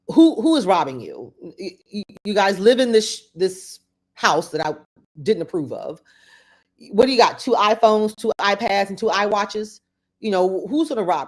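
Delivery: ordinary talk, nothing marked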